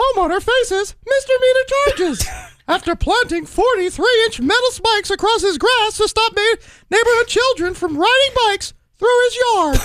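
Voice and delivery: squeaky put-on cartoon mouse voice. Reading a news headline aloud as a bit, in a Mickey Mouse voice. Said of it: "That sounds like Mickey Mouse".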